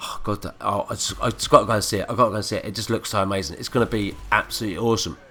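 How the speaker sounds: usual speaking voice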